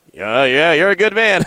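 sarcastic, hollow, offhand, insincere tone. Imitating how the other speaker said the compliment: imitating a sarcastic compliment. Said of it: "It didn't sound like a compliment".

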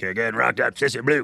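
rough, gravelly, mushy, hard-to-understand voice. Retelling Ed Orgeron's trash talk outside the Rose Bowl: Ed Orgeron gravelly voice. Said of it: "in his gravelly voice".

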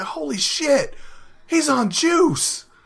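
very slow, loud, high, drawn-out booming shout. Recalling a friend blurting out during a movie in a theater, retelling a loud shout. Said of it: "he said it really, really loud".

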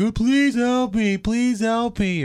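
acted, very slow, high, drawn-out sobbing. Retelling the kidnapped lady put on the phone, imitating someone sobbing. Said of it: "she's sobbing".

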